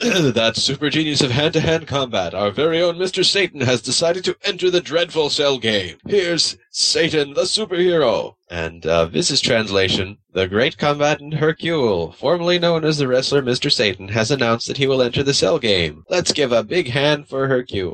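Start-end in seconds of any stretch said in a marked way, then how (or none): 10.3-17.9 geeky, nerdy TV announcer delivery. Reading aloud a translated announcement, in a nerdy TV voice. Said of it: "I'm doing my nerdy TV voice".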